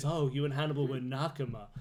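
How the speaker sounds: mock solemn tone. Retelling a woman's line from a tv scene: imitating a solemn delivery. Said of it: "really solemnly says".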